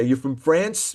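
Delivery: put-on strong, heavy New York accent. Retelling what people say about the speaker's flag, in a heavy New York accent. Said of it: "in a very heavy New York accent and say".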